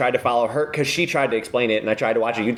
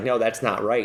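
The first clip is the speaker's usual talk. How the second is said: ordinary talk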